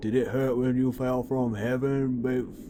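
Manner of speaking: put-on smooth delivery. Acting out a pickup line from a daydream: imitating a cool Giga Chad line. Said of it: "some cool Giga Chad thing".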